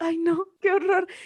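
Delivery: tearful, high-pitched crying lament. Retelling a friend in a corner during a metro scene: imitating someone crying. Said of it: "en una esquina llorando así de".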